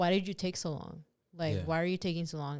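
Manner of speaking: mean, assertive put-on tone. Retelling what was asked when she was slow to answer the door: imitating a mean, assertive tone. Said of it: "it sounds really mean when he's, like, saying it".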